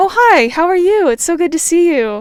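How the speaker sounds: warm, kind, bright, friendly, high-pitched and very loud. Showing how they greet people going into a work meeting: bright, warm, friendly voice. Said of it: "changing the tone of my voice in order to be perceived as friendly and warm and kind".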